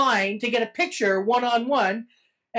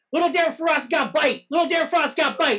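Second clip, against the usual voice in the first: play-acted yelling, called out over and over; 4 semitones higher than usual. Walking through an aisle, the speaker re-enacts yelling at people: retelling own yelling. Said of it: "I just kept yelling at people".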